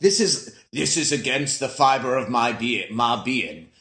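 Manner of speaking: slow delivery with each word drawn out. Retelling a film scene in a Morgan Freeman voice. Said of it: "that was my Morgan Freeman".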